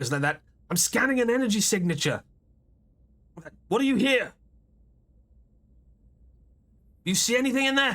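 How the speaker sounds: frantic, alarmed, panicked voice, high-pitched. A game master voices a character heard over a communicator, panicked voice. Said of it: "you hear the panic voice of".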